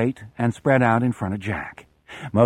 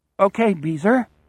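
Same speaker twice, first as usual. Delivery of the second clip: trembling, unsteady, shaky, higher-pitched voice; 8 semitones higher than usual. Narrator reads Moon answering Beezer, in a shaky voice. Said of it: "Moon says in a shaky voice".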